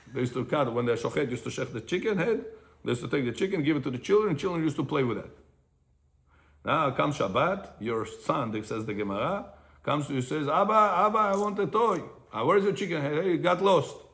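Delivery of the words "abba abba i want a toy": put-on high-pitched, tearful, crying child voice, pleading. Retelling how a son comes to his father asking for a toy, imitating a crying child. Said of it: "And he's crying".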